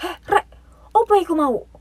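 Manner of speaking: startled, shocked cry, pitched very high. Retelling friends seeing a flying skull caught on camera: acting very shocked. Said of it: "Dengan dengan nada yang sangat kaget gitu".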